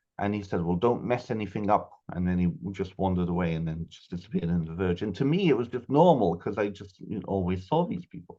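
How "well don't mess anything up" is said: put-on full, strong, thick Welsh accent. Quoting an old man met in the garden during childhood, strong Welsh accent. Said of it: "in a very strong, full Welsh accent".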